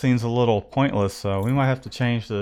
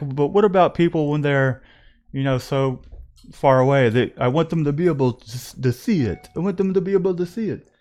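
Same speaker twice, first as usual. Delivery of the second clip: put-on Greek accent, pitched up; 5 semitones higher, 4 dB louder than usual. Retelling a talk across a room, speaker quotes a man in a Greek accent impression. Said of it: "That's my best Greek impression".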